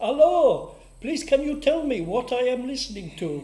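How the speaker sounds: very loud, high-pitched put-on German accent. Retelling a phone call from a man while on air: German accent. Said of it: "a bloke with a German accent".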